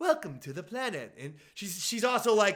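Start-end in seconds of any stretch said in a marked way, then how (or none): 0.0-1.1 nice, courteous, polite announcer voice. Retelling what the lady in the vehicle said: imitating a polite Disney World voice. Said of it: "polite Disney World voice".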